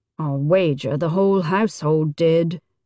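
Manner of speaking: wry, dry muttered aside. A man answers a woman who overheard his quarrel with her father: muttered dryly. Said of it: "he muttered dryly".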